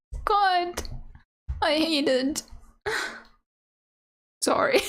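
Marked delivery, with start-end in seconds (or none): 0.2-2.4 overwrought, higher pitch. Reacting to a name being ruined for them, really emotional. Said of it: "I've got really emotional here".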